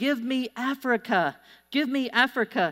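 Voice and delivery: acted-out screaming. Recalling a german man screaming during group prayer; retelling a scream. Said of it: "So he starts screaming".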